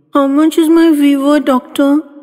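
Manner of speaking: put-on very high, anxious, nervous little-girl voice. Reading a patient asking the doctor a question from her bed, nervously. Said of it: "asked nervously".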